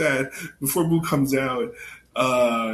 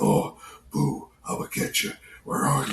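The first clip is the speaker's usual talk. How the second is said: put-on mock whisper; 3 dB quieter than usual. Retelling a funny scene where Mister Satan hides behind a tree, imitating Mister Satan whispering. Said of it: "It sounds like you're whispering".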